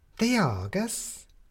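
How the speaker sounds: suspicious, wary, distrustful tone with rising pitch. A woman answers a newspaper reporter asking about a girl, suspicious. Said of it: "said the woman suspiciously".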